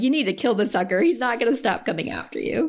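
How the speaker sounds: normal talking voice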